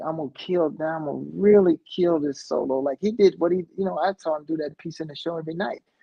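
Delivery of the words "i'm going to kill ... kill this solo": put-on cocky, defiant, determined delivery. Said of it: "it was so defiant".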